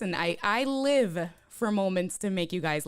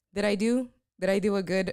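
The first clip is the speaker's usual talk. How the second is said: ordinary talk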